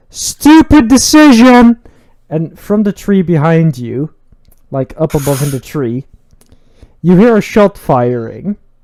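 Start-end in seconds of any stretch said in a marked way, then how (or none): 0.2-1.8 very loud, high screamed outburst. Voicing a guy toppling over as he falls: screaming. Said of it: "he screams".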